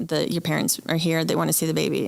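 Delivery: normal talking voice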